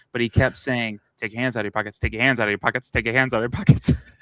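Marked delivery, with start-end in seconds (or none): 1.2-3.9 rapid-fire, very fast delivery. Retelling a man who walked past repeating a command to them, very fast. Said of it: "He said it so fast".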